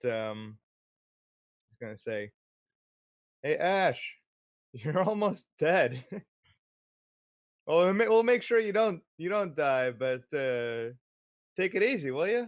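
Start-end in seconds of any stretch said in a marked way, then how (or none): 3.4-12.4 very loud, high shouting. Voicing a character warning a fighting friend: shouting out. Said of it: "gonna shout out".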